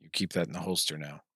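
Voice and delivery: low, hushed, confidential murmur. Narrating a man who leans forward so the crowd behind won't hear, lower voice. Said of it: "leans forward and says in kind of a lower voice".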